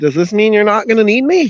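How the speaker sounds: put-on childish kid voice, high and fast. Voicing a kid character from a comic strip: kiddish voice. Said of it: "I can do a kiddish voice".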